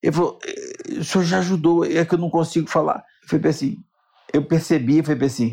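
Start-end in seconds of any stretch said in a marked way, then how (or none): 0.5-3.0 put-on choked-up, trembling voice, struggling to get words out. Retelling what a trembling, emotional man said on approaching: imitating someone choked up with emotion. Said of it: "ele começou a tremer".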